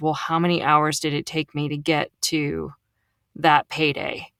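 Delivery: ordinary delivery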